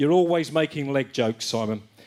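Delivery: ordinary talk, nothing marked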